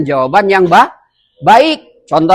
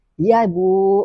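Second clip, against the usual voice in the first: polite, mild, gentle, soft yet clearly audible; 6 dB quieter than usual. Teaching how to answer someone calling you, gentle but audible reply. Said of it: "yang dikatakan suaranya lembut itu bukan pelan".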